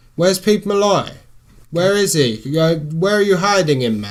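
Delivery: mock angry, demanding tone. Demanding on a prank call where a missing man is: put-on angry demanding. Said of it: "Get angry".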